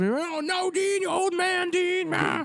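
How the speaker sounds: put-on high, old-timey newsreel voice. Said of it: "that was my throwback voice for that".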